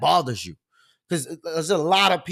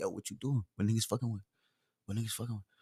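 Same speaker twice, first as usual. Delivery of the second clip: barely audible, hushed, very quiet mumbling; 7 semitones lower, 13 dB quieter than usual. Acting out how a guy from the neighborhood talks: imitating someone mumbling. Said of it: "And he be mumbling".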